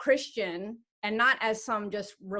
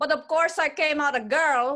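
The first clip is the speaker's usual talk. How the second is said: Filipino accent slipping in, raised, pitched up; 6 semitones higher, 6 dB louder than usual. Speaker telling a story about her parents, in a filipino accent. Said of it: "why am I saying that in a Filipino accent?".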